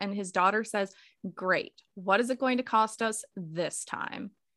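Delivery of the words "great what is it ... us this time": normal talking voice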